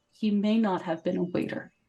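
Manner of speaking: hushed, very soft voice. Role-playing, the player's character turns to another character: very quiet. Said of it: "very quietly say".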